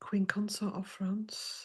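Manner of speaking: soft, slow, unvoiced, whispered reading.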